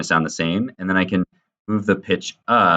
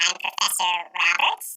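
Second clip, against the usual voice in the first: squeaky chipmunk voice, pitched very high; 12 semitones higher, 4 dB quieter than usual. Demonstrating the changed-pitch section of an audio edit, in a chipmunk voice. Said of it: "you can hear I sound like a chipmunk".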